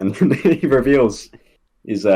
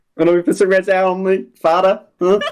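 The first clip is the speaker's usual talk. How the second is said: badly done Boston accent, very high pitch; 9 semitones higher than usual. Describing what Jenny does from Good Will Hunting, imitating Jenny's terrible Boston accent. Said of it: "she does that really terrible Boston accent".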